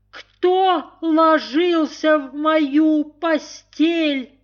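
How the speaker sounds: very high, thin, squeaky little voice. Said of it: "запищал тонким голосом".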